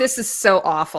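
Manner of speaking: ordinary delivery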